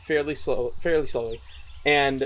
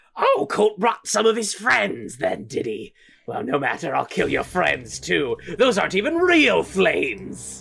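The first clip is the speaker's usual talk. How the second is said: piercing shrill voice, higher pitch; 4 semitones higher than usual. The game master voices an enemy calling from outside: shrill voice. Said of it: "And then all of a sudden you hear this shrill voice from outside say".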